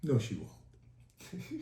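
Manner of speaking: firm yet gentle, kind, authoritative whisper. Retelling what a visitor said with a grin: imitating an authoritative but kind reply. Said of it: "very authoritative, but so kind".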